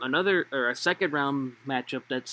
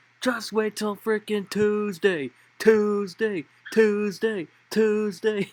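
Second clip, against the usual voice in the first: put-on drunk voice, slow and pitched up; 8 semitones higher, 3 dB louder than usual. Retelling a drunk fan waving at the game: imitating a drunk fan. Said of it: "I see this drunk guy".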